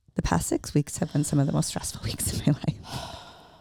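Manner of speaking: low-pitched whisper. Speaker confides to the listener, just between them, whispered. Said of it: "And I just whispered".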